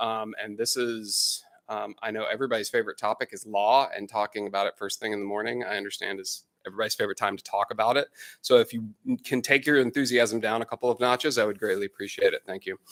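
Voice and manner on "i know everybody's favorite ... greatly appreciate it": ordinary delivery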